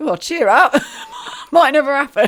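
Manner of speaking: high, loud, jolly, laughing voice. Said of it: "he's like".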